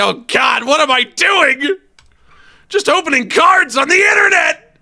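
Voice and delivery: mock very high, loud, collapsing, high-pitched sobbing. Imagining how the video host will break down: imitating someone crying. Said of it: "he's gonna collapse and start crying and say".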